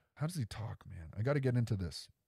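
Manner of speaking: ordinary talk, nothing marked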